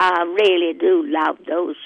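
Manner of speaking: put-on Southern Louisiana Cajun accent. Answering the other speaker's question in a Cajun accent. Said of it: "Enough with the Cajun accent".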